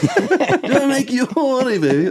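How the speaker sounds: high, slow, purring voice.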